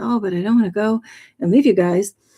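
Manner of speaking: mock sobbing, crying voice. Retelling own words as the dream being says goodbye: retelling own crying plea. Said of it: "And then I really was crying".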